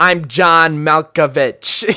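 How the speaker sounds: loud showy announcing. Comparing a character to an actor, imitating John Malkovich. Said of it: "John Malkovich has the same sort of thing. He's like".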